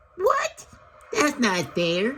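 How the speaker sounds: very high-pitched, squeaky giraffe voice. Narrator reading the giraffe's protesting reply, in a squeaky voice. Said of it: "squeaked the giraffe".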